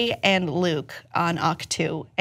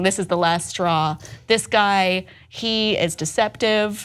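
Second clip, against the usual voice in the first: normal talking voice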